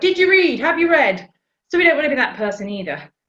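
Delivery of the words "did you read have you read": brash, loud, high-pitched shouting. Speaker describes an attention-grabbing person at a networking event, imitating someone shouting. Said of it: "just shouts out".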